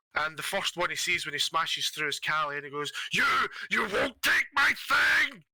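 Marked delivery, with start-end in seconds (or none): 3.1-5.3 very high, drawn-out, top-of-lungs furious scream. Voicing a monster smashing through a wall toward Callie: screaming at the top of lungs. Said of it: "He's screaming at the top of his lungs".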